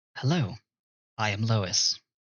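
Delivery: AI computer system voice. Game master voicing an AI introducing itself to a player, in Lois AI voice. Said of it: "And the A I voice says".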